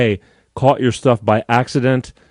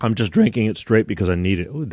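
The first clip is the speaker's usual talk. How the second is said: voice cracking, faster; 4 dB quieter than usual. Drinking Bolt Energy straight while talking to viewers, voice cracking. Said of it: "my voice just cracked".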